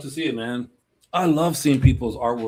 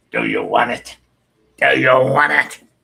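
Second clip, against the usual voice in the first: loud, rough, swooping, menacing, creepy movie villain voice; 8 dB louder than usual. Retelling doing the movie voice to scare a girl: scary voice from the movie. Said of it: "I had to do the voice just to scare the hell out of her".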